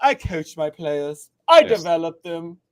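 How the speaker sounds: loud, slow, grand, posh voice. Mocking a coach's quote about developing players: posh Calipari voice. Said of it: "that's my posh Calipari voice".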